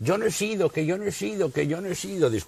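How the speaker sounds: very high, shrill, screeching shriek in a woman's voice. Retelling a recorded voice of a woman: imitating a woman shrieking. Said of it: "una voz de mujer chillando".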